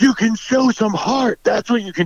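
put-on shout. Retelling how a fan in a bar yelled at the TV: imitating a yell. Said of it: "just yelled".

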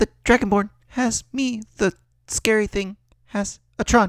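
small, light put-on voice. A game master voices a character the players hear: small light voice of Cha. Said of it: "You'll hear a small light voice".

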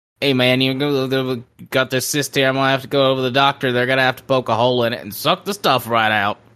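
put-on mumbling voice, hard to understand. Retelling what a patient said about a cyst, Boomhauer-like voice. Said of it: "he talks kinda like Boomhauer from, um, King of the Hill".

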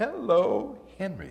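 bright, cheery voice. Retelling how the next-door neighbor greeted them during a TV show, imitating Judy's cheery hello. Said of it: "I hear this cheery voice say".

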